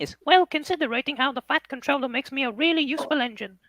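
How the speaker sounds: very high, chipper, light put-on voice. After offering to do an impression, the speaker does a Thomas impression.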